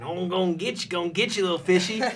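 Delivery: very loud, high, put-on Southern Illinois accent. Retelling someone trying to catch a fish by hand: [name]'s Southern Illinois accent. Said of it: "bringing out her Southern Illinois accent".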